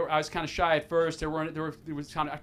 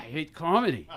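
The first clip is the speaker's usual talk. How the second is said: put-on Ukrainian accent. Retelling what a woman said on hearing about stand-up comedy: Ukrainian accent. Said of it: "in her Ukrainian accent".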